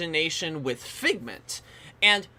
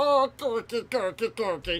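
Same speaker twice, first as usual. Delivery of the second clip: slow, gargled, choked-off drowning gurgle; 4 semitones higher than usual. Mocking a movie character's voice, imitating a drowning, choking gurgle. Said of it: "sounds like someone is drowning and choking".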